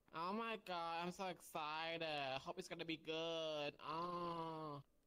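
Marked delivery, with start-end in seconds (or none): 0.1-3.7 insincere gushing, fake enthusiasm full of sarcasm. Replying to someone who says they need to talk later: sarcastic fake enthusiasm. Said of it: "I can hear the enthusiasm".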